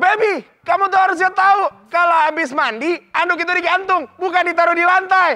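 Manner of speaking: high, loud, angry nagging voice.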